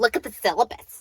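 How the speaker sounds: mock arrogant, stuck-up, snooty tone. Retelling what a professor said when asked one question: imitating an arrogant stuck-up reply. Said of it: "with this arrogant, self-centered, stuck-up response attitude in her voice".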